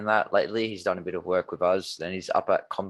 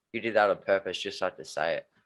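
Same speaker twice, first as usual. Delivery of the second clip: normal talking voice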